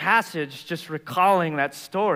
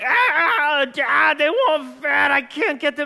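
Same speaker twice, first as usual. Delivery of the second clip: put-on crying little kid's high, drawn-out tearful yell; 10 semitones higher, 4 dB louder than usual. Retelling a son's meltdown over a too-small backpack: imitating a child yelling in tears. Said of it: "he's just yelling".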